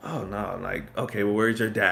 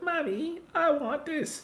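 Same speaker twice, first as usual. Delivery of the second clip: put-on very high, slow, drawn-out cartoon girl voice. Imitating his wife's niece, who talks like a cartoon she watches, Peppa Pig voice. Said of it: "She talks like Peppa Pig".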